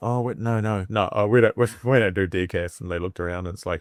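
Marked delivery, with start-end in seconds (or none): none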